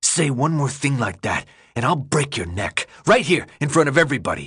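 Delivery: furious, fuming, seething voice. Standing up to threaten someone who told him to shut up, fuming.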